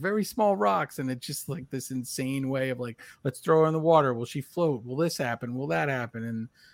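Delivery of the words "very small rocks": blurted, raised, high-pitched yell. Retelling the witch scene where one guy yells an answer, re-enacted yelling. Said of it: "the one guy yells".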